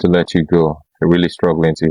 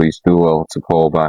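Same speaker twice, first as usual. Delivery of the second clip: ordinary delivery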